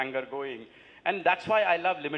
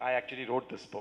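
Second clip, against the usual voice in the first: put-on dry, flat, expressionless delivery; 2 semitones lower, 4 dB quieter than usual. Retelling answering the man beside him who asked about the book, retelling a deadpan reply. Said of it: "I deadpanned".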